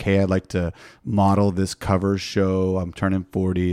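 usual speaking voice

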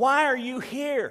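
high, loud, puzzled angelic voice.

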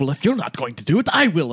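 loud, quick, in-character voice. At a charity ball auction, a character ends a whispered argument with a loud declaration. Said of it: "And then loudly says".

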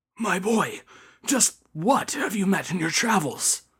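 frightened, fearful, awed, astonished. A priest pulls a traveler aside to question him, hushed and fearful. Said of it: "asked him in a hushed and fearful tone".

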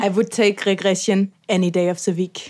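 put-on German accent. Repeating a line after being asked to do it: german accent. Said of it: "could say that in a more German accent".

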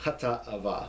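short pause splitting Hata and Ava. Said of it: "put a little break there".

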